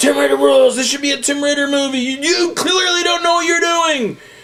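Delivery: shrill, very high, out-of-control yelling. Retelling being pushed through a quiet crowd: retelling own yelling. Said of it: "I'm still yell-, yelling".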